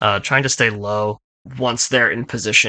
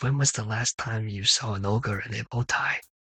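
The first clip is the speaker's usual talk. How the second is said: much quieter and slower delivery; 7 dB quieter than usual. Narrating a scene and voicing Fang's line: very quietly. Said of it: "very quietly".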